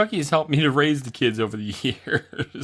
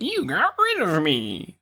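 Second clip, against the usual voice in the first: very drawn-out, high, swooping, sing-song creepy clown voice; 5 semitones higher than usual. Imagining the clown doll complaining about being thrown away, clown doll's voice. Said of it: "That's not what he sounds like".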